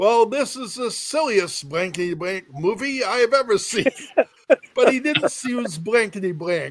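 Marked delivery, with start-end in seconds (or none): 0.0-3.9 loud, pitched-up outburst. Recalling a hushed movie audience, the speaker quotes their father: loudly quoting father. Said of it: "my father lets out in a loud voice".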